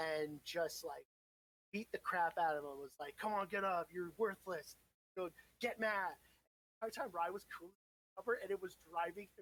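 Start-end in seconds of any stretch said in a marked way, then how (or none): none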